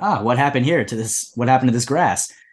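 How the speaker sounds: normal talking voice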